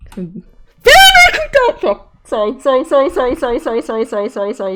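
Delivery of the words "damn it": shouting, higher and louder. Reacting right after making a mistake: yelling. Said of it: "I yelled".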